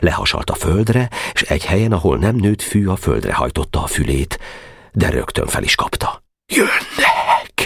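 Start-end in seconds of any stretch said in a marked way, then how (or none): 6.5-7.7 whispering in fear, frightened. A character lifts his ear from the ground and speaks: frightened whisper. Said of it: "suttogta rémülten".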